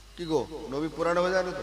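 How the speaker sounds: soft, fast, put-on teasing tone.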